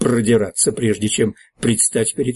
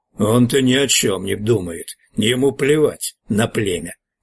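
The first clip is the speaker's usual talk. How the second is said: snarling, growling in anger. Narrator voicing Hargon's reply in a story, an angry growl. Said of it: "зло прорычал Харгон".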